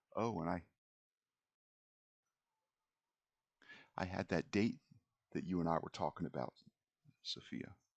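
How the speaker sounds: confidential, hushed-in-tone delivery. Retelling what someone said on coming over, in a confidential voice. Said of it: "in a sort of a confidential voice says".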